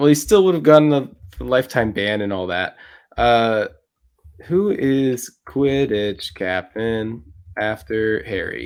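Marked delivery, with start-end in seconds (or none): 4.5-8.7 very slow, flat read-aloud voice. Wondering aloud about a question, the speaker puts on a googling voice. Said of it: "That's my googling voice".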